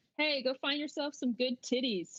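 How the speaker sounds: cheeky, in-character jeering heckling call. Voicing a character yelling after someone walking away: yelling in character. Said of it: "wants to yell".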